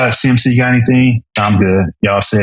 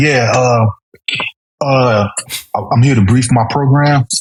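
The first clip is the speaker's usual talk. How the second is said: mimicked talking with full mouth, higher pitch; 3 semitones higher than usual. Retelling how a chief came in to brief: imitating talking with chew in mouth. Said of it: "briefing me with chew in his mouth".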